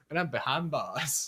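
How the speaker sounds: quiet, soft-spoken Texas accent. Co-host jokes after mixing up two names, speaking as James Corden in a Texas accent. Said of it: "That's a Texas accent".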